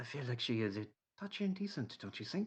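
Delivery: hushed, confidential, half-whispered aside. Retelling how a man half-whispered to you behind his hand, in a half-whisper. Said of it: "puts his hand over his mouth to whisper to you".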